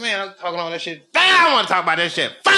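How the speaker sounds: fed-up, heated, rattled off, swooping pitch. Retelling arguing with her in the green room after the show: retelling an angry argument. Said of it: "we in the green room arguing".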